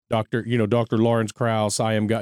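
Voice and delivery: plain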